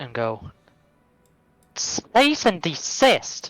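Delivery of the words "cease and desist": high, magic-sounding, amplified booming voice. Casting a spell to make the character's voice very loud: magically loud voice. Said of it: "make my voice very loud".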